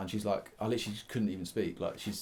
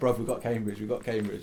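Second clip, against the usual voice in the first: usual speaking voice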